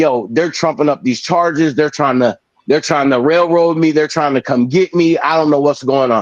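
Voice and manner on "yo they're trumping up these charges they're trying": ordinary delivery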